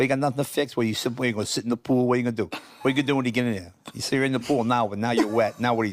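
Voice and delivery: put-on Boston accent. Retelling the voice heard when walking toward the pool: Boston accent. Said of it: "I hear that Boston voice".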